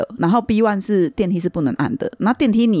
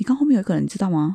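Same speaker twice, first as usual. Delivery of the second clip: whispered voice. Retelling what someone said quietly at the elevator panel: imitating a whisper. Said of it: "他就很小声跟我说".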